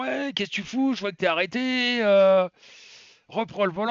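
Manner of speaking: mock bossy, high-pitched yell. Retelling a phone call from a driver's boss: imitating the boss yelling. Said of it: "Il commence à gueuler".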